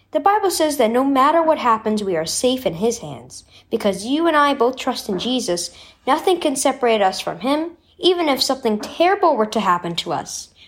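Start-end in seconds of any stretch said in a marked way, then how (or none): none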